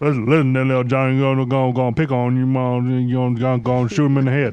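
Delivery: rambling speech that doubles back on itself. Doing a kid in the style of Boomhauer: Boomhauer voice. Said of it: "all kids are Boomhauer".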